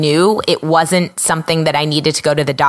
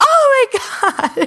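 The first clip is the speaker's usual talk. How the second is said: mock screaming, higher pitch. Retelling how a doctor reacted on seeing the face: imitating a doctor screaming. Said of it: "he looked at me and he screamed".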